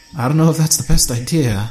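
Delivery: tired, worn-out, doubtful. Watching a man about to swig from a strange flask, said wearily. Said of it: "I said wearily".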